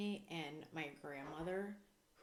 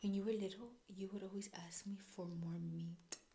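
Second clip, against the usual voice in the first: put-on Spanish accent. Retelling what she told them when they called her, imitating her Spanish accent. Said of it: "I'll say it in her accent".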